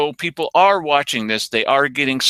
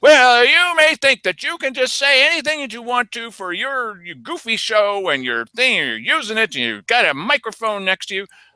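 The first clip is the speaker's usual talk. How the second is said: higher, put-on angry scolding voice; 8 semitones higher than usual. Retelling being scolded at a meeting: imitating Keith Eck scolding. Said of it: "Keith Eck lights into me".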